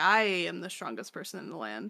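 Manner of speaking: usual speaking voice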